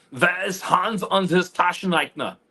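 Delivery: put-on angry German accent. Showing how bad german can sound: put-on angry german. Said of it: "I could make it sound really angry".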